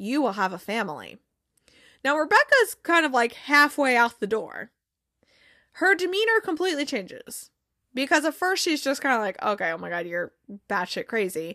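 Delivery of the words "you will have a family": mock unfazed delivery, much lower. Retelling what a woman blurts out during a session, imitating an unfazed delivery. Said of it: "very unfazed by all of this".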